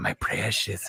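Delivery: low, soft hissing voice.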